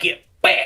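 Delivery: frantic, sudden, panicked, unthinking delivery. Swinging a quarterstaff at a charging creature: panicked shout. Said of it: "I'm not thinking, I'm panicking".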